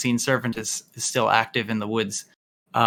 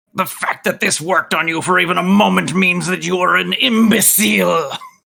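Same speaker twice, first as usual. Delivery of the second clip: loud, high, scathing, scornful monster voice; 8 semitones higher, 7 dB louder than usual. Delivering a vicious mockery insult during the game, Bone Devil voice. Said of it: "in my Bone Devil voice".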